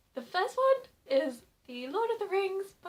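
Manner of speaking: loud voice squeaking on the words. Presenting the last two books to viewers, squeaky voice. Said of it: "Why Am I Squeaking?".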